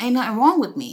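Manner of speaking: sassy, dismissive attitude. Retelling a wrestler's denial that anything is wrong: imitating a line said with attitude. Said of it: "with a whole ass attitude".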